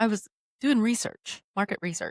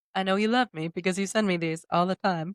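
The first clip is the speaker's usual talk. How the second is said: normal talking voice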